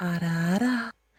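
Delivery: put-on airy, breathy older-sister tone. Coaching someone on how to say a phrase, demonstrating a breathy big sister voice. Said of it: "just do it really like breathy as well".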